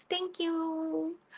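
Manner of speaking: soft, high, sweet little voice, drawing out "you". Retelling what a girl asking for votes said, imitating a sweet little voice. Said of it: "she had her sweet little voice".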